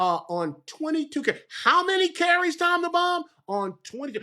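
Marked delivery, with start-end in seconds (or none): 1.6-3.2 loud hollering yell with stumbling start. Speaker calling out to people in Baltimore from Kensington, Maryland: yelling. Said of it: "I'm yelling from Kensington".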